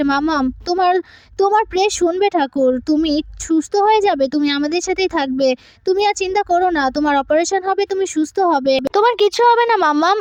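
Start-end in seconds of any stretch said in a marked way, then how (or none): none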